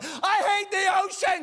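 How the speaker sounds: mock, very high, shrill, drawn-out furious yelling. Retelling a story, imitating the angry daughter yelling: imitating an angry yell. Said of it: "She's just yelling at this guy".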